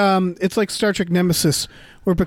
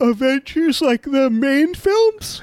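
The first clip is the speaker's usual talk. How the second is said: speaking through a yawn, higher; 7 semitones higher than usual. Answering another speaker's question about Avengers films, yawning while talking. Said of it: "thank you for yawning that question at me".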